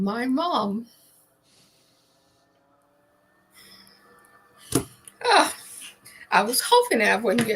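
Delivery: struggling to hold back emotion, swooping pitch. Asked about their most memorable mentor, answering while getting emotional. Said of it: "let me try not to get emotional".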